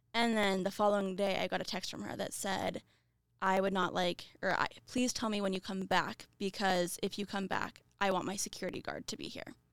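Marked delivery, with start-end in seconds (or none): none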